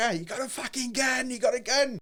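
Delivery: put-on very high, drawn-out shrieking scream of alarm. Retelling the moment something hit the wall behind them, retelling a scream. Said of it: "So I started screaming".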